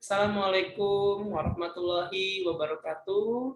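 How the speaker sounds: flat, monotone machine-translation robot reading. Second speaking flaw example: a greeting in a Google Translate voice. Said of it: "robot voice. Suara Google Translate".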